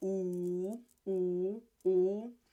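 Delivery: drawn-out, gossipy, prying, nosy oohs. Teaching a word, acting out a nosy person walking by; nosy person's ooh. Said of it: "the nosy person walks by and says".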